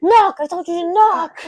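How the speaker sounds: very loud, high-pitched yelling shout. Retelling a film scene where an officer walks in: imitating Dark Helmet shouting. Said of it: "He's like".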